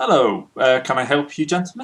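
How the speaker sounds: put-on elderly gentleman's voice. Voicing an older gentleman greeting visitors: older gentleman character voice. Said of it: "a older gentleman comes out to greet you".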